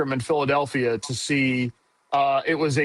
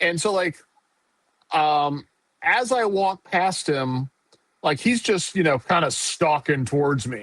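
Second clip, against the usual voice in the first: ordinary talk, nothing marked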